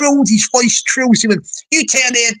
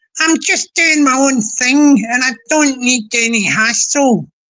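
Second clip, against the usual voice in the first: woman's voice, stretched slowly. Attempting someone's voice after apologizing to her first: imitating Peggy's voice. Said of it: "I'll try to do Peggy's voice".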